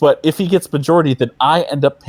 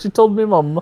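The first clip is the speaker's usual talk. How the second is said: fake British accent, pitched up; 5 semitones higher than usual. Repeating a friend's phrase as a joke: put-on British accent. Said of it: "can I get more of your British accent".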